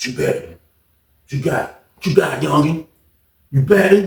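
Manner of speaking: dumb-sounding voice. Retelling a betting story, the speaker imitates a guy's dumbass voice. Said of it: "He had a dumbass voice".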